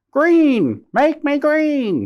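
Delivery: very high, loud screech drawn out slowly. Reading a children's story, voicing Parrot at the front of the line, screechy. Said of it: "he called out in his screechy voice".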